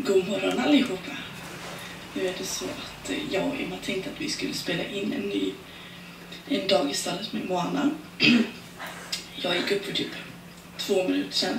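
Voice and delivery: hushed, breathy, just-woken-up morning whisper. Just got up, greeting everyone while recording a day at the stable, in a morning voice. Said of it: "så därför jag har världens morgonröst".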